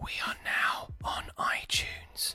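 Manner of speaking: whispered voice. Announcing a small podcast update to listeners, whispering. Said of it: "I'm gonna whisper it".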